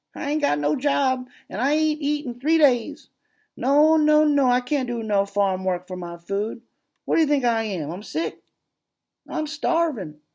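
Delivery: very high, nagging, whiny voice. Reading a story where a tramp begs for food: whiny voice. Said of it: "He'd heard his whiny voice".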